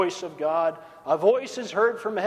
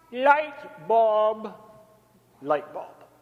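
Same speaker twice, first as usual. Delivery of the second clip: put-on Siberian accent; 2 semitones higher than usual. Retelling a schemer's sudden idea, in a put-on Siberian accent. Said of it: "he said in his Siberian accent".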